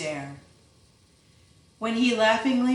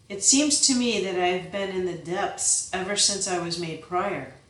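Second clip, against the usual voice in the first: plain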